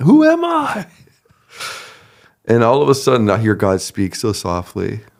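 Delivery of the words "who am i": play-acted, very high, anguished scream. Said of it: "I'm screaming".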